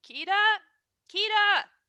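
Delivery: shouting in a character voice. Narrator voicing Grikiki, yelling out into the ship for Kida. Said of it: "Grikiki yells out into the ship".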